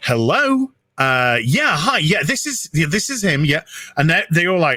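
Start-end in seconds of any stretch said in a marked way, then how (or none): 0.0-3.6 slow telephone-answering voice. Retelling answering his phone in front of housemates, in a telephone voice. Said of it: "I'm doing the telephone voice".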